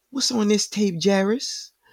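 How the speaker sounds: put-on high-pitched New Orleans accent. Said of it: "she's from New Orleans, so she goes".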